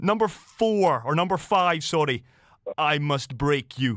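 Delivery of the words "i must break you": put-on Russian accent. Quizzing guests on Rocky lines, doing a Rocky impression. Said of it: "my best impersonation of all four".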